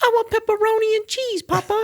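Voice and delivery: very high, squeaky put-on little kid voice. Acting out a child asking a parent for pizza: put-on child voice. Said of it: "the child's gonna be like".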